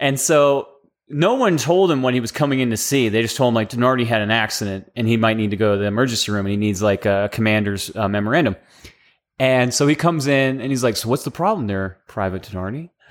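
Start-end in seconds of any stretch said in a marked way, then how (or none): 11.0-12.9 very calm, composed, low and soft voice. Retelling the officer who came in to see private denardi: imitating a very calm voice. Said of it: "very calm".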